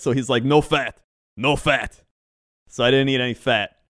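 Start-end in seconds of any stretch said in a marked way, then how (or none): 0.4-2.0 put-on old man's Eastern European accent. Retelling what an old Eastern European surgeon said: imitating an old Eastern European surgeon. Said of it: "old Eastern European man".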